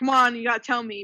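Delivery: ordinary talk, nothing marked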